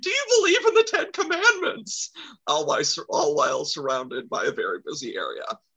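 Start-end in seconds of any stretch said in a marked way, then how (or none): 0.0-2.1 very high, shrill, full-throated top-of-lungs screaming. Retelling how the dad chased people down the street: imitating someone screaming. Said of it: "screaming at the top of his lungs".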